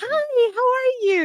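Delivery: mock breathy, girly, high, sweet and bubbly voice. Like you're mimicking how women soften their pitch to come across as warm and agreeable, lifting the voice well above your own. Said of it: "inflections that go up at the end of the sentence".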